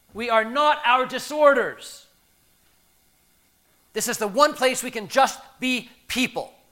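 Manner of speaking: high, loud, furious screaming.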